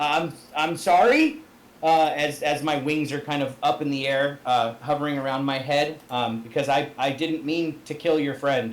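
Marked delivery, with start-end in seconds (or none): 0.3-1.4 put-on stuttering, stammering voice. Speaking in character after a friend is hurt: stuttering apology. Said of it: "I kinda stutter a bit".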